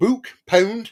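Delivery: Bolton accent, exaggerated O's. Showing a favorite funny regional accent, a Bolton accent with exaggerated O's. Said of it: "I like the the Bol- Bolton accent".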